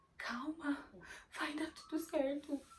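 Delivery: high, slow, tremulous, quavering voice. Retelling how the cousin's wife calmed her during heavy bleeding: imitating a trembling voice. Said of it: "Numa voz muito trêmula".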